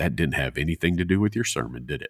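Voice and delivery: very dry, deadpan tone. Retelling someone's comment on a sermon illustration, imitating a very dry tone. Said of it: "very dry".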